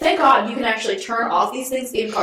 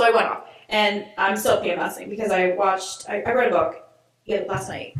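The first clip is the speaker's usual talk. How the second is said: ordinary talk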